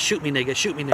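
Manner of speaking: ordinary talk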